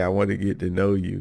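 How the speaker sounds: ordinary delivery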